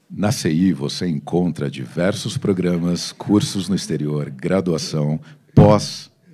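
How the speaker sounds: deep, booming radio announcer voice. Asked by the host to read an ad in his announcer voice: radio announcer voice. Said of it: "com essa voz aí".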